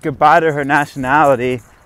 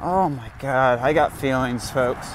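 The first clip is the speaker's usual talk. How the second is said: normal talking voice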